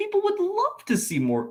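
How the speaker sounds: voice breaking, cracking very high mid-line. Speaker talking about Luke Skywalker in The Mandalorian, voice cracking. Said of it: "Why did I voice crack there?".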